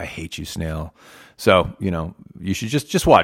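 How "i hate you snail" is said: hushed whisper, much quieter and lower. Podcast host imagining what one fish whispers to the snail; whispering. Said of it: "He's whispering things at him like".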